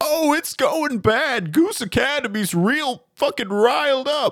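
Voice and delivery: very high-pitched, frantic yelling. Narrating a scene, voicing Professor Fern as he runs around the corner, yelling. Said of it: "runs around the corner and yells".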